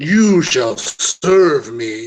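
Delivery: undead dragon monster voice. Voicing a dracolich pointing a claw at a player: Dracolich voice. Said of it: "points a big bony claw at you".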